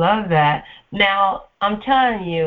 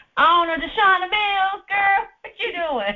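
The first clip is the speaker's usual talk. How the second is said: put-on grandma voice, much higher pitch; 11 semitones higher than usual. Host introduces a guest on the show, imitating her grandma's voice. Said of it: "say it like her grandma mama say it".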